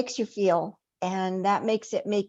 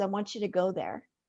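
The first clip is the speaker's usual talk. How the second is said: put-on quiet, flat, emotionless voice, quieter; 5 dB quieter than usual. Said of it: "he tells me very quietly and no emotion".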